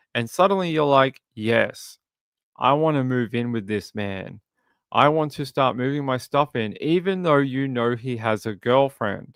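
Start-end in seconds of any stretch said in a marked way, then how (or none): none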